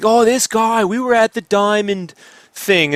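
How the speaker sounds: put-on New York accent. Retelling what a woman said when he bought a comic, in a New York accent. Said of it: "she had that New York accent".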